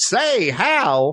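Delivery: put-on high, old-timey, old-fashioned nineteen-thirties way of talking. Repeating own opening call to another speaker: nineteen thirties way. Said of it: "in that much of a nineteen thirties way".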